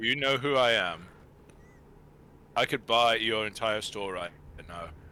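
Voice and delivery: put-on accent blending South African and Californian. Imitating Elon Musk at a coffee shop with no eggs: weird Elon Musk accent. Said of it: "This weird-ass accent".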